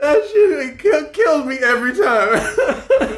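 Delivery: high, slow wheezing laughter, crying with laughter.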